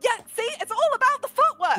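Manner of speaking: put-on squealing child voice. Voicing a child after a sword fight tumble: squealing child voice. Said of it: "squeals and goes".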